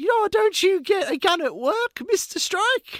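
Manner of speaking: put-on very high, slow little kid voice. Retelling a scene from a detective story, the speaker does the nephew character voice. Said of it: "I'm doing the voices now".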